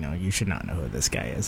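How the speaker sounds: dry delivery, dropped low and quiet.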